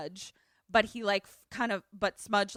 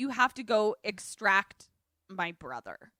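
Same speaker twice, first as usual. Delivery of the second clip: plain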